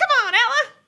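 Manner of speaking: high, loud, tiny, cheery gnome voice. Voicing a tiny gnome egging on a friend in arm wrestling: gnome cheering a friend on. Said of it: "you can see her go like".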